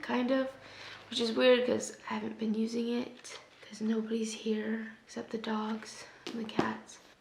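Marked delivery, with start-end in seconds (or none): 1.1-7.0 soft, voiceless, worn-out whisper, barely any voice. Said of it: "I'm losing my voice again".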